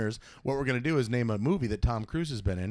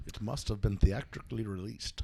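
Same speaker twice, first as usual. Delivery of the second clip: put-on mashed-up supervillain voice; 3 semitones lower, 5 dB quieter than usual. Stating a game rule in a put-on voice: Loki Bane voice. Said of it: "This is my Loki Bane voice".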